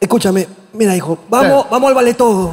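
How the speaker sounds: loud, calling motherly voice. Imitating an audience member's mother talking to her son: imitating a mother. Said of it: "Esta voz es de una mamá así".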